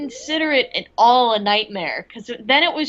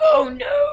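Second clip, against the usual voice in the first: very high, feeble, weak and raspy voice; 13 semitones higher than usual. Describing a voice heard in a dream, the speaker imitates it: weak raspy voice. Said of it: "this very weak, like, raspy voice just saying".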